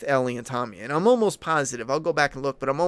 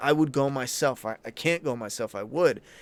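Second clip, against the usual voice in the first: put-on, desperate, begging, pleading tone. Acting out how the character Tommy would plead: imitating Tommy pleading. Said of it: "and he would plead".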